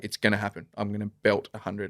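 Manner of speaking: grave, serious delivery. Retelling someone's prediction of scoring a hundred: imitating someone dead serious. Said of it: "he's talking, like, dead seriously".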